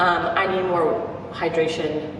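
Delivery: ordinary talk, nothing marked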